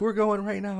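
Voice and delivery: put-on urgent, freaked-out panic. Retelling how she reacted to your emergency room joke, imitating her freaking out. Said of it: "she starts freaking out".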